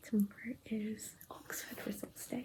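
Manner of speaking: nervous, scared, unvoiced whisper.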